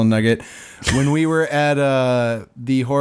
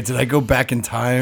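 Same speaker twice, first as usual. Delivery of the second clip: normal talking voice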